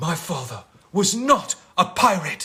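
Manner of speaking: loud, slow, drawn-out heroic movie-style proclaiming. People keep telling you to stop doing Will Turner; answer them in a Will Turner voice. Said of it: "Stop doing Will Turner".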